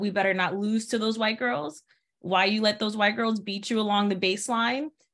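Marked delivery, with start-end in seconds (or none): none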